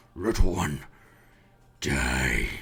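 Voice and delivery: voice drops very low, words broken apart. Voicing a monster turning to face a player, very broken Common. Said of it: "says in broken, very, very broken common".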